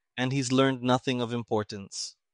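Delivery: plain reading voice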